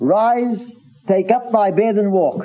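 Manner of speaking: authoritative voice. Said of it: "this was a commanding tone".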